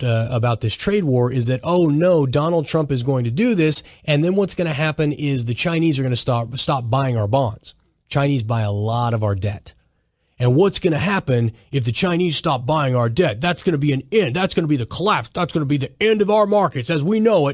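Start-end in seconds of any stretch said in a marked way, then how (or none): none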